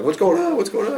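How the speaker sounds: high, loud, startled voice.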